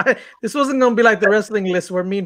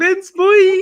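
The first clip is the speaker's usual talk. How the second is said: put-on very high-pitched hype-man yell in a boy's voice; 11 semitones higher, 4 dB louder than usual. Retelling how Ben said boy: imitating Ben saying boy. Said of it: "He was like".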